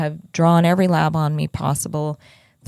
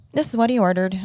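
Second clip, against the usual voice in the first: put-on sarcastic, dismissive, snarky, pitched-up voice; 5 semitones higher than usual. Retelling her answer about the ordered blood draw: imitating a snarky reply. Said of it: "really snarky with me".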